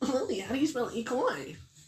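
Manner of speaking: very high, loud, squeaky voice. Doing an impression for the others: Ethan impression. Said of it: "That's my Ethan impression".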